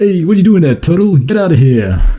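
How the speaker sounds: Italian American mobster accent. Imagining Super Mario as a mobster while chatting, Mario as Italian-American mobster. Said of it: "like a mobster thing".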